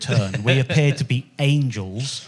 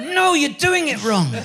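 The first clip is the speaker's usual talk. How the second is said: put-on very high, cross, angry child voice. Retelling a child scolding a parent during pretend play: imitating an angry child. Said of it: "he'd get really angry with me".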